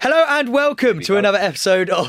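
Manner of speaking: put-on shouting kids' TV host voice. Asked to open the podcast as a children's TV presenter, shouting. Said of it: "I don't think you need to shout".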